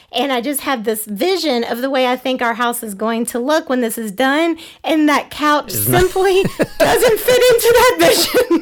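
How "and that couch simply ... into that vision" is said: slow, higher-pitched words through laughter. Explaining that the couch doesn't fit the renovation vision, say it laughing while speaking. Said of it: "I'm laughing".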